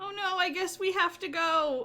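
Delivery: drawn-out, loud call, slow and high. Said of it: "I yell out".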